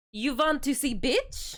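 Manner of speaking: put-on Russian accent. Showing the one line that can be said in a Russian accent. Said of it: "I can say one thing in a Russian accent".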